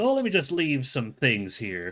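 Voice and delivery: animated cat voice with swooping, playful pitch. Describing a movie trailer scene, imitating Bill Hader's Cat in the Hat. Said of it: "Bill Hader is, he does the whole, like".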